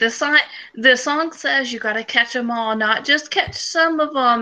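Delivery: put-on weepy, drunk, sobbing lament. Retelling a video of a man crying about Pokemon: imitating a drunk sobbing man. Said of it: "drunk and sobbing".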